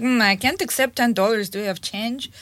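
normal talking voice

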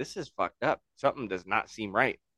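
ordinary delivery

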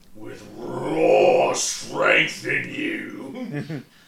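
low, very slow villain voice.

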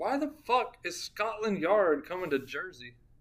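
usual speaking voice

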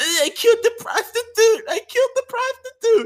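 put-on very high, loud, blubbering toddler wail. Retelling how a man reacted, imitating crying like a baby. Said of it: "he's crying like a two-year-old baby".

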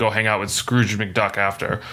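ordinary talk, nothing marked

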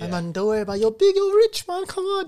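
put-on very high, piping, little Scouse accent. Retelling how the waiter answered the cousin, in a little Scouse accent. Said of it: "in his little Scouse accent".

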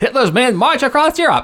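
put-on high-pitched, booming, old-time newsreel announcer voice. Hosts riff on announcer voices; the speaker does a newsreel announcer voice. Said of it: "newsreel announcer".

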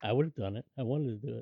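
grumbled, muttered aside under the breath. Retelling a character's remark after the vampires open the door, muttering under his breath. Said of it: "under his breath".

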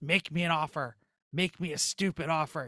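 slow, drawn-out devil voice. Retelling his answer to a workman who asked about his car: devil voice. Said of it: "I'm putting on the devil voice".

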